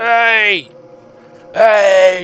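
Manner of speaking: high, loud shouting, calling out.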